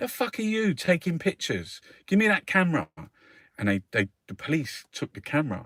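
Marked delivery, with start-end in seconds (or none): 0.0-2.9 very high, loud, swooping sergeant's screaming shout. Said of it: "he's shouting at him".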